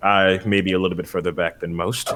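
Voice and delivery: hushed, muttered under the breath. Speaking in character about staying back in the fight: muttering under breath. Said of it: "I say that under my breath".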